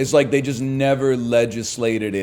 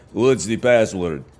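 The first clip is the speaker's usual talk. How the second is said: put-on Eastern European accent; 3 semitones lower than usual. Playing somebody at the back-room door slot, eastern european accent. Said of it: "with like a Eastern European accent".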